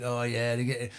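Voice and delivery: ordinary talk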